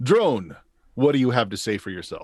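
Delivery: reverberating put-on voice. Narrating a game, addressing the player's drone in the Autocrat's reverberating voice. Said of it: "It is the autocrat".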